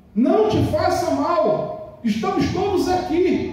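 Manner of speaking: slow, high-pitched shouting.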